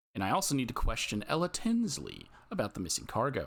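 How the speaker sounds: ordinary talk, nothing marked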